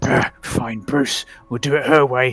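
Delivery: muttering to himself in character. Voicing a character before he draws a sword: Bruce muttering to himself. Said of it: "Bruce mutter to himself".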